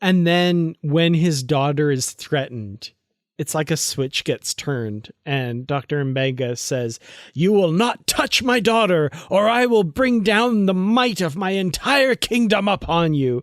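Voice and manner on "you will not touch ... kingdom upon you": mock, dead-serious, genuinely menacing, pitched-up voice. Describing a character whose daughter is threatened, quoting his threat: imitating Doctor Mbenga's menace. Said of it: "there is true menace in his voice".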